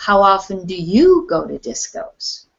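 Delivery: strongest stress of all on you. Turning a question back on the other person, with strong stress on you. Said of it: "stress the word "you."".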